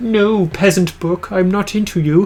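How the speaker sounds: weird, affected, snooty put-on voice, drawn out. Acting out snubbing a book that won't sell: weird put-on snooty voice. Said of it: "I just did a weird voice for that".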